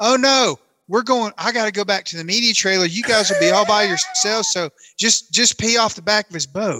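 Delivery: calling out at full voice. Retelling what a man yelled as their boat idled past him, retelling a yell. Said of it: "he yells".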